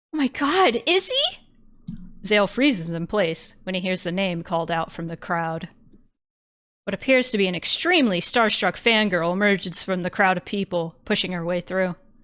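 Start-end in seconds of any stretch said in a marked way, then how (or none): 0.1-1.3 put-on very high, very slow anime girl voice. Narrating a scene, voicing someone calling out from the crowd: anime girl voice. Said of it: "anime girl voice. I forgot about that".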